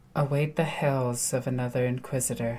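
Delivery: muttered under the breath. Speaking in character during a tense exchange: muttered under the breath. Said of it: "And under my breath".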